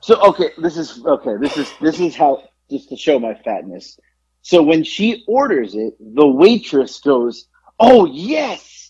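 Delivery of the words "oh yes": mock-emphatic, put-on eagerness. Retelling a waitress's reply to an order, imitating an emphatic waitress. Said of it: "just like that. ... That was like really emphatic".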